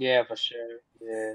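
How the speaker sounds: dejected, depressed, glum, low and slow. On a podcast, answering a co-host about waiting for an announcement: sounding depressed. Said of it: "You sound depressed as fuck".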